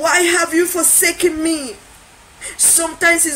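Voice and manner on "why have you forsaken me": loud, anguished, crying scream. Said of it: "you're going to scream".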